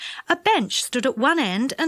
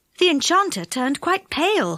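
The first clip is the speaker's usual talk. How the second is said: ordinary delivery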